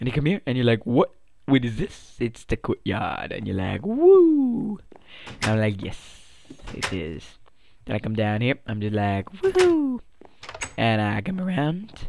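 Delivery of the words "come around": breaking voice, cracking mid-phrase. A sick speaker showing listeners around the courtyard; voice crack. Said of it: "Voice crack right there".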